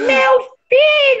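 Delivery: very high, over-the-top, exaggerated old-lady voice. Showing how people badly imitate an old woman, exaggerated old lady voice. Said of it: "Aí tenta imitar um velho, fica ridículo".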